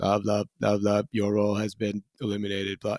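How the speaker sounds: droning, flat, robot-like monotone. Retelling being told their role was eliminated, the speaker imitates the manager's monotone. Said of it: "he's just like monotone staring at you".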